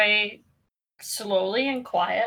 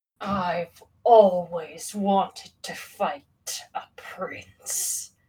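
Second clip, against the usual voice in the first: towering, deep demon voice, very slow and drawn out; 4 semitones lower than usual. Game master voicing a huge demon rising from its throne, towering demon boss voice. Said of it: "This creature is about 20 feet tall. / his enormous, kind of bony-looking hands on the armrest, / He gets up from the throne, / We banish you from this plane. / and it is going to graze its sword up i".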